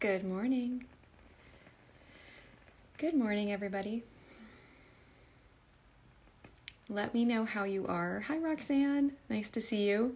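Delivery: speaking softly and quietly. Speaker greets everybody at the start, speaking quietly. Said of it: "I don't know why I'm speaking so quietly today".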